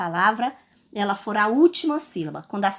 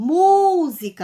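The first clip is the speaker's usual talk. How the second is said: música with stress on first syllable mu; 6 semitones higher, 4 dB louder than usual. Asking which syllable was pronounced with more force, stress on mu. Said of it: "qual é que eu pronunciei com mais força? Eu pronunciei a sílaba mu".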